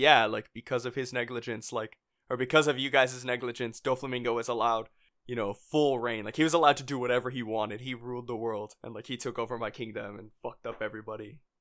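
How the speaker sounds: normal talking voice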